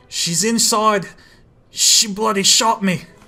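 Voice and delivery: high-pitched attempted Australian accent. Voicing a line the way Rex would say it, attempted Australian accent. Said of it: "Australian accent".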